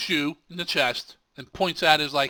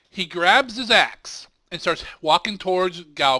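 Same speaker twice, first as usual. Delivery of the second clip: normal talking voice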